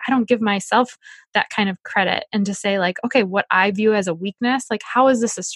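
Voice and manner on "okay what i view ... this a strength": plain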